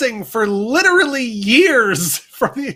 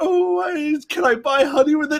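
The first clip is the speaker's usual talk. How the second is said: slow cartoon bear voice, "oh" drawn out; 3 semitones higher than usual. Retelling a story, the speaker answers in a Pooh voice. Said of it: "than I am a Pooh voice".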